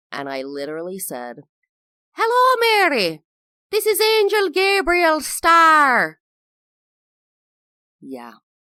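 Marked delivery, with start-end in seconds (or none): 2.1-6.2 put-on adopted, raised, loud Irish accent, drawing out "star". Recalling walking up to mary as angel gabriel in a play: taken-on irish accent. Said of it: "I definitely had taken on the Irish accent".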